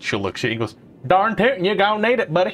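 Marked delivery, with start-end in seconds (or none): 1.1-2.5 high, put-on rural Appalachian accent. Narrator voices a character answering a player's thanks: Appalachian accent. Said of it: "she's now from the Appalachian region".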